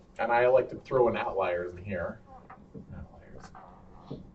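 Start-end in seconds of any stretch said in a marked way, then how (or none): 3.0-4.2 whispered, very soft, barely audible voice. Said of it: "Say it louder, please".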